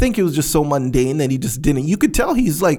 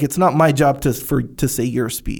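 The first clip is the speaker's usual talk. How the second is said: ordinary talk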